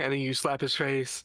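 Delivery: normal talking voice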